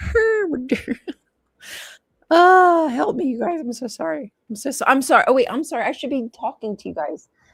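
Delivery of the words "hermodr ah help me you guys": pitched-up, slow, helpless giggling through the words. Reading a myth aloud and cracking up at a name: laughing while talking. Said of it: "this name, Hermodr, just got me laughing".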